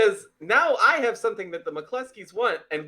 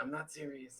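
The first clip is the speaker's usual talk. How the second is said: whispered aside, lower and quieter; 7 semitones lower, 19 dB quieter than usual. Playing a character, whispering aside to a captive: whispering. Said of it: "kinda whispered to Ben".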